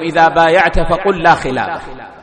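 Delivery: plain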